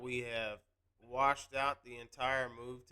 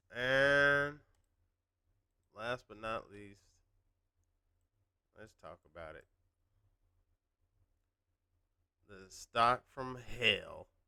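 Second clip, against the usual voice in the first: bitter-sounding tone; 3 dB louder than usual. Introducing the last stock to discuss with another speaker: sounding bitter. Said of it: "you sound bitter".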